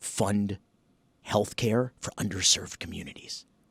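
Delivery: hushed whisper. Showing the whisper test on a harmless plan: whispering. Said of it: "why are you whispering?".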